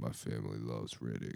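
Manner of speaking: put-on rough, gravelly, very deep voice. Chatting about a series, the speaker does a gravelly Riddick impression. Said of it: "That's a pretty good impression. Gravelly".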